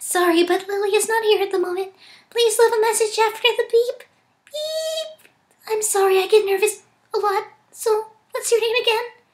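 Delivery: soft, high cartoon voice with stretched beep. Trying out a voice for Lily's answering machine message, Fluttershy-esque voice. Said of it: "kind of a Fluttershy-esque voice".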